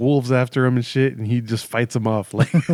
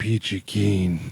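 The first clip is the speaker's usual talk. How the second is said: imitated furious voice, lower and quieter; 4 semitones lower, 4 dB quieter than usual. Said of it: "the angriest voice".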